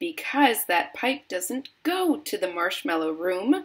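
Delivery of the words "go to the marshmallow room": plain reading voice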